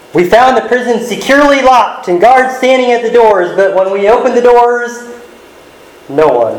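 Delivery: awkward, nervous, hesitant, high-pitched delivery.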